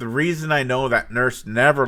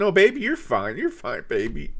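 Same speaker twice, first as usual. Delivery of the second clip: put-on tearful crying voice, higher pitch; 7 semitones higher than usual. Retelling what a crying nurse said: imitating someone crying. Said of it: "and she's crying".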